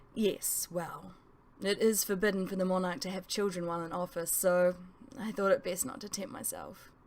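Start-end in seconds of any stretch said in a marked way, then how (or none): none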